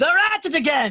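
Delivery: loud high yelling. Delivering news the speaker said would be whispered: shouting instead of whispering. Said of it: "Do you call that a whisper?".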